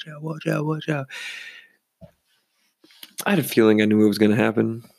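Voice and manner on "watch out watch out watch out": put-on high, soft drunk voice. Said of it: "He's like".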